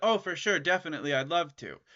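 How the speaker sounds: ordinary talk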